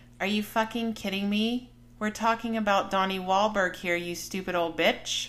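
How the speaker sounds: ordinary talk, nothing marked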